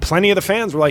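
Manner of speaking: ordinary talk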